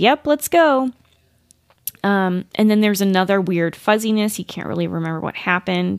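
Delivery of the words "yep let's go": mock playful tone, pitched up. Retelling a story, a companion agrees to go along, retelling a playful reply. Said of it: "in a playful tone".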